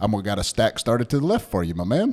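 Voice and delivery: DJ-style on-air radio announcer voice. Acting out how a man talks once he gets on air, imitating his radio voice. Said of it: "he gets his radio voice on".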